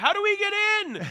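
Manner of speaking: play-acted, shrill, high, loud shouting. Retelling how someone yelled at guys by the track: imitating someone yelling. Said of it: "yelling at these guys".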